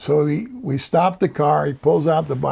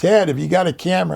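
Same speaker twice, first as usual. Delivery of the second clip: mock hollered call-out; 3 semitones higher than usual. Recalling a meeting, the speaker imitates a man hollering at him. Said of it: "he started hollering at me".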